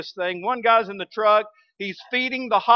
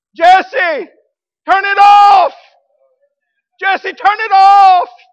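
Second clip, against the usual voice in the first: very loud, very high, shrill, drawn-out desperate yell; 10 semitones higher, 13 dB louder than usual. Retelling a story, repeating a call from the attic: imitating someone yelling. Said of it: "And he yells again".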